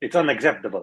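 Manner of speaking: put-on English spoken with an Italian accent. Saying a requested line as Antonio Conte: Antonio Conte impression in Italian accent. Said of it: "that was Italian".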